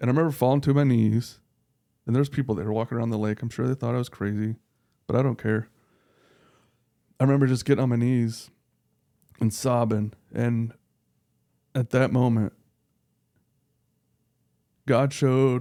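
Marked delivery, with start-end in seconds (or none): 10.3-15.6 slow, emotional speech, words drawn out. Telling another speaker about a breaking point, getting emotional. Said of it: "I'm probably gonna get emotional".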